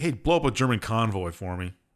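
ordinary delivery

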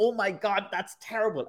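sudden, high-pitched, pained cry. Describing a scene where tea has burnt Elizabeth's face, Elizabeth crying out in pain. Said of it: "crying out in pain as if to be like".

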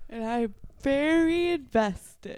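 spoken through a yawn. Podcast co-host being taught American music history, said through a yawn. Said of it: "You say through a yawn".

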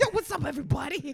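very high squeaky hype voice. Greeting everyone as Chris Tucker, who was introduced as joining live: Chris Tucker impression. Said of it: "Chris Tucker's joining us live in studio".

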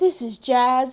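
dull, flat public radio announcer voice. Suggesting they talk like the show's radio guy, Parks and Rec boring radio announcer. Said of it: "the really boring radio announcers".

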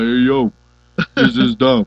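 loud, slow, drawn-out voice. Retelling how a friend sounded on the phone with a hurt neck: Stallone voice. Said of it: "he sounded like Stallone".

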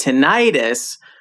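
American tinnitus, middle syllable stressed. Comparing British and American pronunciations of tinnitus: stress on middle syllable 'ni'. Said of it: "with the emphasis on the middle syllable".

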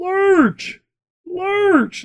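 very high, shrill, heckling yell. Telling a story about a game, the speaker acts out a man retelling someone yelling a nickname. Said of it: "started yelling he's giving him his nickname".

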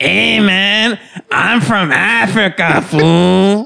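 put-on high, 1930s old-western Mexican accent. The speaker imagines a guy introducing himself: 1930s Western Mexican voice. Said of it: "You're doing like 1930s Western Mexican voice".

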